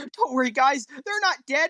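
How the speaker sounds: mock weepy, high, put-on tearful, crying-through-it delivery. Acting out a player's reaction when a teammate dies, mock crying. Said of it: "says through tears".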